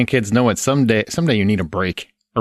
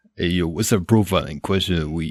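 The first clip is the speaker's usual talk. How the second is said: put-on Italian-American tough-guy voice, lower pitch; 4 semitones lower, 4 dB quieter than usual. Asking for the question of the week, still doing a Stallone impression. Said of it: "He's gonna do the whole podcast as Stallone".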